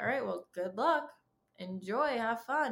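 insincere, snarky, sarcastic delivery. Imitating how he would answer news of a big career moment: mock-sarcastic send-off. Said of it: "and this like sarcastic stuff".

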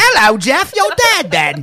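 put-on very high, loud, weird British accent. Calling out to Jeff in a joking bit: weird British accent. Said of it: "Like a weird British accent".

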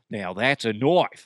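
imitated Australian accent. Quoting a line from Crocodile Dundee, Crocodile Dundee Australian accent. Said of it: "Do you remember Crocodile Dundee? He didn't sound like that".

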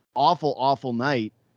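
ordinary delivery

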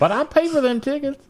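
high, mocking, entitled, whiny voice.

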